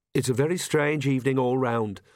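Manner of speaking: ordinary talk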